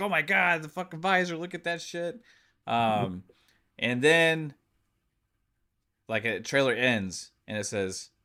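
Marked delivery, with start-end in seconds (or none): 0.0-2.2 high screaming freak-out. Describing trailer visor moments, imitating Pong screaming. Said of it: "like Pong's screaming".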